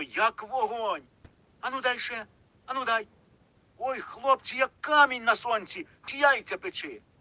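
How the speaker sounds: very high, astonished, amazed cry. Mykyta takes Kost's hand, then drops it at once: crying out in amazement. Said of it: "скрикнув вражено".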